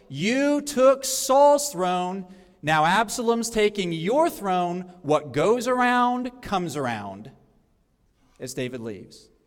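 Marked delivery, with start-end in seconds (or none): none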